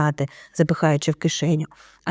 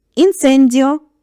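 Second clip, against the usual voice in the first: loud, high-pitched exclaimed call; 7 semitones higher, 5 dB louder than usual. A man points his wand at the wall behind him and casts a spell, exclaiming. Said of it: "вигукнув містер Візлі".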